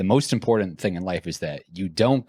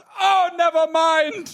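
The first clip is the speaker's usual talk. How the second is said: very high, loud, bad put-on Caribbean accent; 4 dB louder than usual. Speaker retelling what Dee Dee said about the breakup, imitating Dee Dee's Caribbean accent. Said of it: "I'm not good with accents".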